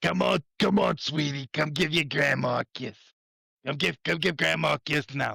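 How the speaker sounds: movie mobster tough guy voice. Imitating a villain's voice: new york italian tough guy voice. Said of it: "those New York Italian tough guys you see in, like, a movie".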